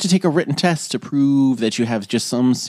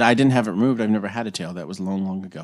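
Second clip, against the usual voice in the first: ordinary talk, nothing marked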